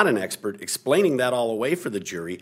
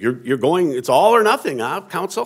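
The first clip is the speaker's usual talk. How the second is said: put-on surprised tone, higher; 5 semitones higher, 6 dB louder than usual. Counsel recounting what the judge asked on the record, imitating the judge's surprised tone. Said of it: "I get a surprised tone in her voice".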